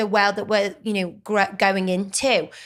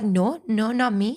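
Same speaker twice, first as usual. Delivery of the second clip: put-on French accent. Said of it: "I was pretending".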